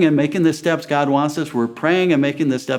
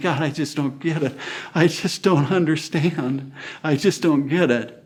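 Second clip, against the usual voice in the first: acted weeping, crying voice; 3 dB quieter than usual. Retelling a past prayer to God after losing land: retelling own weeping prayer. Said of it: "weeping and crying and saying".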